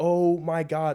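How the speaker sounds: put-on stunned outburst of alarm, high and loud. Retelling seeing the power grid explode: retelling own shocked exclamation. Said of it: "So I'm freaking out".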